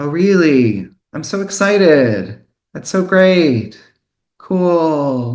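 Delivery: slow, understated, cool, drawn-out, deliberately muted excitement. Imitating a boss or friend feigning excitement: imitating deliberately understated excitement. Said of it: "deliberately understated".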